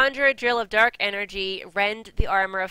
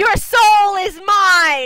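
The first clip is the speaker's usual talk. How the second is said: very high, very loud, shrieking villain roar; 12 semitones higher, 11 dB louder than usual. Speaker mimicking the game's voice acting, put-on Shao Kahn shout. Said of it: "Stop shouting".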